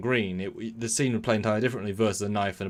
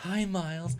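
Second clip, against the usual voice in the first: put-on sweetly evil villain voice, higher, quieter; 9 semitones higher, 4 dB quieter than usual. Retelling a TV scene of a possessed wife threatening: possessed Keiko voice, charming and evil. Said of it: "the charming, dis-, disgustingly evil".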